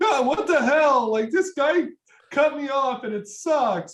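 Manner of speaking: high-pitched, loud mock outrage, like a fake tantrum.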